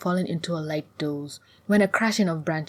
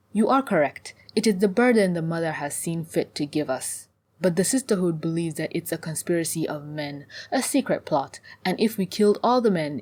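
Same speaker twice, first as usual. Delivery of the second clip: plain reading voice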